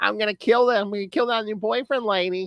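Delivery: very high squeal, hulking thug voice. Acting out the comic's giant brute: high-pitched squealing giant voice. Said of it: "his voice, like, having, like, a high pitch, like, almost a squeal".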